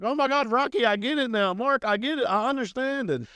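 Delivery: play-acted very high, hyper, wired-up babbling gush. Retelling telling other inmates about the change: retelling being excited and hyper. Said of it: "Okay, okay, calm down".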